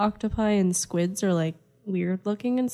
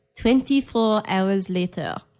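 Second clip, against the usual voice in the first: put-on French accent. Player takes her turn in a game of repeating a phrase, French accent. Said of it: "say that with a French accent".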